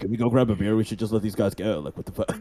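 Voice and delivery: low wizard-like whisper. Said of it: "whispers in his ear".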